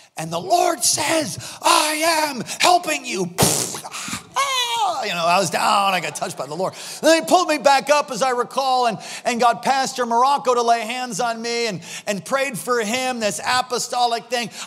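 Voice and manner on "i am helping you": put-on shrill, drawn-out, fervent yell. Retelling a prophet calling the speaker out from the stage: imitating Cindy Jacobs yelling. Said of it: "a shrill voice and full of fire".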